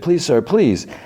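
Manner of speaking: woman's high, pleading, begging voice. Retelling a scene, speaker quotes a woman begging: imitating a woman begging. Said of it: "She's like begs".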